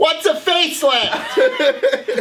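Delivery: put-on shrieking yell, very loud and very high. Telling a story about an uncle's facelift, acting out retelling a loud scream. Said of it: "he just screams real loud".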